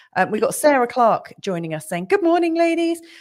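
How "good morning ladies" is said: spoken in a very high-pitched voice. Reading out a message from Sarah Clark as she imagines it: high-pitched Sarah Clark voice. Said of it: "you said that with a high-pitched tone, but that's how I imagine it".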